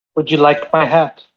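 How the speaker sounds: put-on odd little gnome voice. Voicing a character who has just turned into a gnome, in a little gnome guy voice. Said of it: "he sounded like old Greg for a second".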